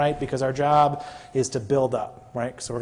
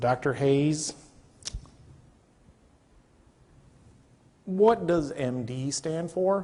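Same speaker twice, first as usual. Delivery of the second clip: slow, unhurried Kentucky southern drawl. Retelling what a favorite attending from Kentucky asked them as an intern: imitating slow southern drawl. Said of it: "He has a kind of slow southern drawl about him".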